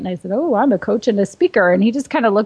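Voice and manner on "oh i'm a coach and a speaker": cocky, proud, sassy, pleased-with-yourself tone. Retelling own past answer to a question: imitating own proud sassy tone. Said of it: "all proud and sassy pants".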